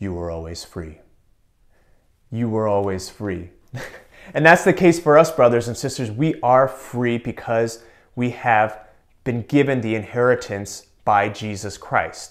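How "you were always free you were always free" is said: utterly deadpan, low, matter-of-fact delivery. Retelling a man's reply when they shouted they were free, imitating a deadpan reply. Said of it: "he would very deadpan face say".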